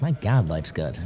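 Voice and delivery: ordinary talk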